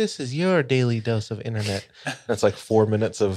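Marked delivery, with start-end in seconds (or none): 0.0-1.9 put-on boyish, young kid-like voice of about twelve. Speaker describing a YouTube channel they watch, doing the Daily Dose of Internet host impression. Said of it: "he sounds like he's 12 years old".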